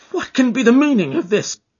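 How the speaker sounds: very high, stunned cry. Reading the story aloud, a man reacts to the laughter, crying out. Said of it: "he cried".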